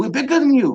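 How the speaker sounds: put-on Chinese accent. Retelling what a man from China said: imitating a Chinese accent. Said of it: "I'm speaking type of accent".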